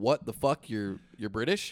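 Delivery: normal talking voice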